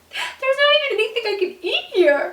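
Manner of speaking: very high, loud, tearful voice holding back sobs. Retelling crying at a restaurant when asked what's wrong, acting out holding back sobs. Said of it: "trying to control my crying".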